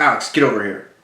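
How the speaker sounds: put-on, very loud, cross, upset fatherly call. Telling a story, the speaker quotes their dad calling them over: imitating an upset tone. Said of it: "he kind of an upset tone".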